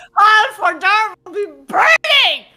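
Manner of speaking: very loud, booming, high yell. Speaking in character to the other players, yelling. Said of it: "Why are you yelling?".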